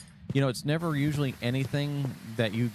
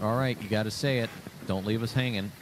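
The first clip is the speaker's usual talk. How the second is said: ordinary delivery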